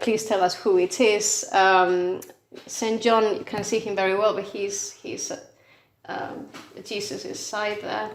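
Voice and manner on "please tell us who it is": plain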